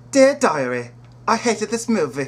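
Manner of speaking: put-on English accent. In a comedy sketch, a performer speaks in an english accent. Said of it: "That's English accent".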